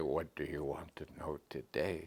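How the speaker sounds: low, soft, level voice.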